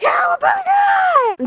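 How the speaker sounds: very high, drawn-out battle-cry shout.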